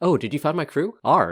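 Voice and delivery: keen put-on voice. Voicing Intira, who gets up as the party approaches: excited NPC voice. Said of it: "she excitedly gets up and she's like".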